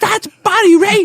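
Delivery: mock very high shriek, far too loud. Retelling what Charles said right after they turned the corner, imitating Charles screaming. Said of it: "And he screams it so loud".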